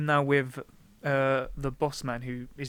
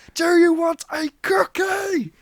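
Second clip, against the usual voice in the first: shrill, very high, loud, furious top-of-the-lungs yell; 8 dB louder than usual. Telling a podcast partner about a grown man who yelled, retelling an angry man's shout. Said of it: "shouting with anger at the top of his lung".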